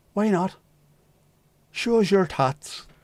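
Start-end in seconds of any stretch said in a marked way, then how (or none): 1.7-2.8 put-on Northern Irish accent, pitched up. Asked not to say tats with an Irish accent, saying it anyway: Northern Irish accent. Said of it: "Please don't say tats with an Irish accent".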